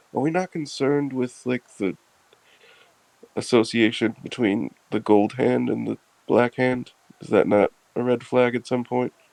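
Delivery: quiet, hushed whisper. Pulling another character aside on the ship to talk privately: whispering in character. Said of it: "I'll kinda whisper to him and be like".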